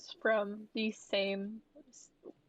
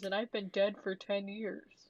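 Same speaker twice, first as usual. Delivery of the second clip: ordinary delivery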